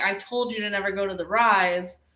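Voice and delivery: ordinary talk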